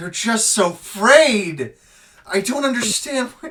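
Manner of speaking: very high, very loud, shrill, booming crashing wail. Voicing a demon character complaining about frayed wires: crashing death wail voice. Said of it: "with a voice that sounds like the crashing death wail of a thousand worlds".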